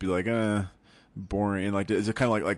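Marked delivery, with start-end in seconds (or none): 0.3-1.6 mock bored, unenthused tone. Showing how acting unenthused and cynical in the usual role sounds: mock bored, unenthused tone. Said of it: "act like I'm not enthused".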